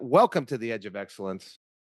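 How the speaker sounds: usual speaking voice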